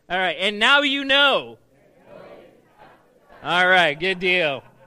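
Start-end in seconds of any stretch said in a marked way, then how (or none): 0.3-1.6 high, loud, slow projected voice with oomph. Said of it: "you guys ready".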